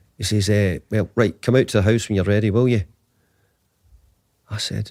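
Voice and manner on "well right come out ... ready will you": put-on Scottish accent. Retelling a phone call, quoting the caller: poor Sir Alex Ferguson accent. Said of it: "that's a poor Sir Alex accent probably".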